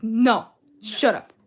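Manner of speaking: mock angry voice. Imitating a girl who is teased about a waiter: imitating someone getting mad. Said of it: "She gets so mad".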